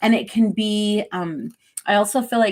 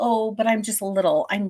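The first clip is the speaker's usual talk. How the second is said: meek, shy, timid little younger-sister voice. Imitating how another speaker's voice comes across: imitating a shy voice. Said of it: "And then it feels shy".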